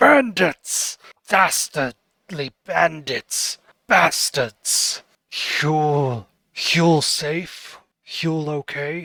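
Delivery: fuming, slow, angry voice with words stretched out. Voicing a ghost who gets angry at bandits: angry character voice. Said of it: "he gets angry at that".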